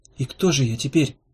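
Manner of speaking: plain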